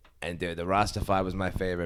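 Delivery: ordinary delivery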